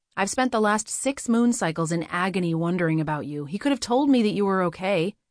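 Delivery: ordinary delivery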